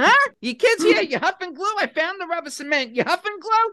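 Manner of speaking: very high-pitched voice. Retelling a mother who found rubber cement: imitating her mom. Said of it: "she came and she's like".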